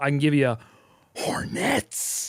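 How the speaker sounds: slow, hushed whisper under the breath. Asked to whisper because the baby is sleeping, answering the co-host, whispering. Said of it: "can you whisper it at least".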